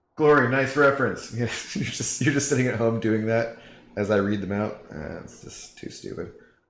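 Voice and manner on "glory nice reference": higher, put-on yelling voice. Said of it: "Josh Medlin is yelling at him across the bar".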